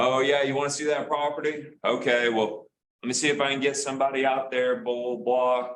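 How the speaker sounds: put-on casual East Texas accent. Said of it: "making fun of them, this is how they talk".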